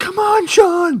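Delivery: very high, shrill, loud arena-fan cheering yell. Retelling a fan at a wrestling show: imitating a woman yelling. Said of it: "she's just yelling".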